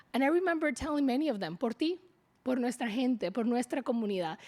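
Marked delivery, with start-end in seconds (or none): none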